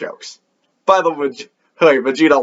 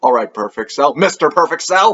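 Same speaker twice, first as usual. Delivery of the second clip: ordinary talk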